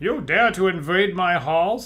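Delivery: loud bandit snarl. Narrating the infamous bandit leader confronting the party: snarling Norris the Grey. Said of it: "He snarls".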